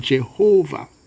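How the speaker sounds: Jehovah stressed on second syllable, ho. Explaining how the written name is usually said: stress on second syllable of jehovah. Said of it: "we tend to put the stress on the on the second syllable".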